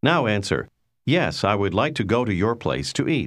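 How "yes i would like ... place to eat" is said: ordinary talk, nothing marked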